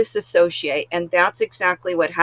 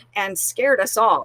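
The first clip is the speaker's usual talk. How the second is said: ordinary talk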